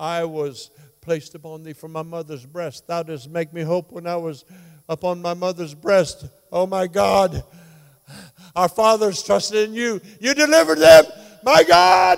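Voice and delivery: put-on agonized scream. Retelling the crucifixion scene as the sufferer: acting out screaming in agony. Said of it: "He's screaming".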